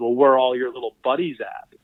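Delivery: ordinary delivery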